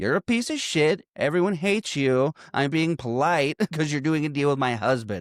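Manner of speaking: mock harsh, furious, scathing angry delivery. Retelling a film scene where a wife tears into a man: imitating someone angrily scolding. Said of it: "she tears him a new asshole".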